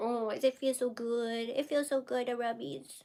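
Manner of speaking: soft, grating little critter voice. Pet owner speaking for the animal being rubbed: annoying little animal voice. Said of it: "you have to hear my annoying little animal voice".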